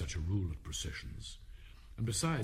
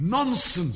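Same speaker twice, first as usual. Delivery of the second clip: very loud, decided outburst; 8 semitones higher, 11 dB louder than usual. Narrator reading the child answering the screaming Queen, very loud and decided. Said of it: "said Alice very loudly and decidedly".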